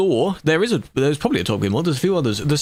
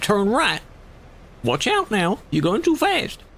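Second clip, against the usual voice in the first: put-on high-pitched old granny voice; 5 semitones higher than usual. Recalling the silly sat nav voices, the speaker does the grandma voice. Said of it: "there's a grandma voice, which is like".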